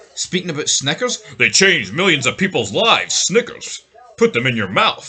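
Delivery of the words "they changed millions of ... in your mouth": play-acted, very hyper, amped-up pitch. Mocking an announcer's sudden switch to hyper ad reads: imitating Pat McAfee, hyper. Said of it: "turn into, like, the most hyper guy on the planet".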